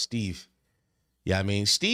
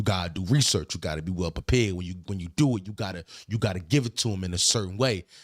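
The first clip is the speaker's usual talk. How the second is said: much lower, lecturing put-on dad voice. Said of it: "that's how I voice sound when I do it".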